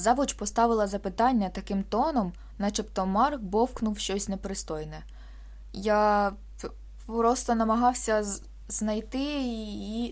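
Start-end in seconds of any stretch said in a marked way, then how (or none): 5.7-10.1 tongue-tied, halting, broken words, much slower. Mark answers the head teacher's question, tongue-tied, halting words. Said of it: "язик задерев'янів, і слова вилітали з рота немовби поламаними".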